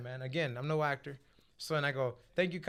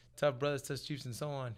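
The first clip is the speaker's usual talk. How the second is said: plain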